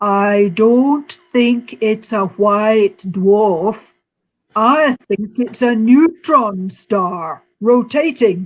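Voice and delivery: put-on Yorkshire accent, northern English. Quoting Fred, the first one to speak at the end of the talk, in a Yorkshire accent. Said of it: "he said in his best Yorkshire accent".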